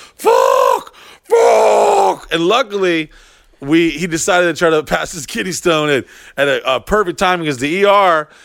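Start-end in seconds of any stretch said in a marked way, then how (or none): 0.2-2.3 mock scream, much higher pitch. Telling about taking a man to the hospital, imitating him screaming. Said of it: "screaming like".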